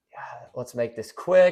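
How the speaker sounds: aside dropped low in pitch. Retelling what an opponent whispered to his friend: imitating someone whispering. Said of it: "I hear him whisper under his breath".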